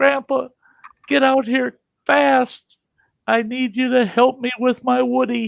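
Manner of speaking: put-on very high, tearful, bawling child's scream. Retelling what a bawling, screaming grandson shouted: imitating a bawling, screaming child. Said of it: "He's bawling and screaming".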